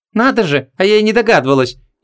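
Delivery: high, snorted, biting sarcasm. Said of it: "язвительно фыркнула".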